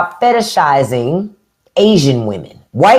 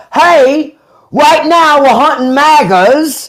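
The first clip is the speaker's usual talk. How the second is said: bad put-on Australian accent, high, slow drawl; 5 semitones higher, 3 dB louder than usual. Saying he feels like Steve Irwin when baiting MAGAs; bad Steve Irwin impression. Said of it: "that's me trying to do my Australia accent".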